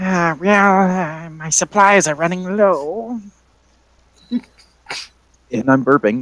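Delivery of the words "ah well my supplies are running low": put-on high old lady crone voice. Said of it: "the old lady voice".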